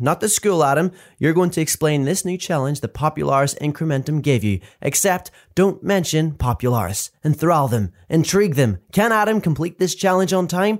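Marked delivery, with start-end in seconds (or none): none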